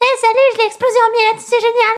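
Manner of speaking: put-on very high kid voice. Recalling what he said as a kid playing a game, imitating his childhood voice. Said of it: "vous enlevez la voix grave d'aujourd'hui et vous mettez cette voix".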